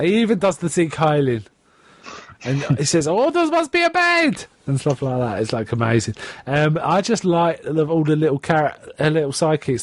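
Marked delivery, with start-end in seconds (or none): 3.1-4.4 put-on German accent, very high pitch. Quoting a cartoon rat sidekick's line: imitating a German accent. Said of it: "With a German accent".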